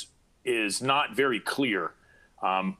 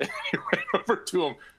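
high voice, laughing through the words; 8 semitones higher than usual. Describing an officer finally moving to cover, laughing while talking. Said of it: "Sorry, I laugh".

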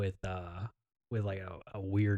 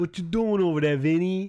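shrill, booming put-on New York Italian accent; 9 semitones higher, 9 dB louder than usual. Showing a co-host what talking that way would sound like, in a New York Italian accent. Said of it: "Like that kind of like Italian thing".

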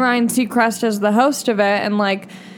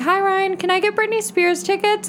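put-on tiny, very high, baby-like little-kid voice; 9 semitones higher than usual. Speaker retells being seven on a phone call, in a baby-like voice. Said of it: "so I sound like a baby".

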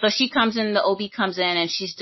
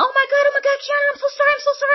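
put-on very high-pitched shrill screaming; 4 dB louder than usual. Retelling how a nurse burst into the room: imitating a nurse screaming. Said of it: "comes in there screaming".

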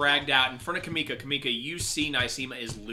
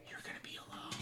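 breathy, very hushed, very quiet close whisper. Narrator voicing a man whispering into the listener's ear: whispering in someone's ear. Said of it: "he whispers in your ear".

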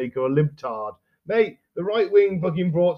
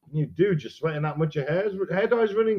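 ordinary delivery

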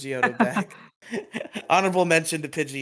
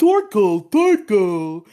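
generic doofy cartoon voice, louder; 6 semitones higher, 10 dB louder than usual. Complaining about the new dub, mimicking the doofy Torkoal voice. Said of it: "like doofy voice".

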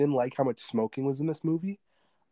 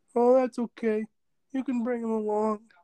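very high-pitched, dejected, beaten-down resignation; 9 semitones higher than usual. Retelling a movie scene, imitating a beaten-up Lewis. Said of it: "Lewis is so beaten up. He's like".

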